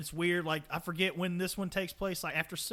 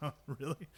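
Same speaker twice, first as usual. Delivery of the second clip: put-on surprised chuckling, quieter; 2 semitones lower, 6 dB quieter than usual. Retelling how the narrator reacted while reading the script: imitating a surprised chuckling reply. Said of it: "just starts chuckling".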